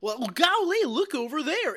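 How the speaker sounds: put-on high, childlike, naive voice, pitch up, innocent wonder. Retelling how Gomer Pyle wanders around distracted: imitating Gomer Pyle. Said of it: "Gomer Pyle is practically chasing butterflies".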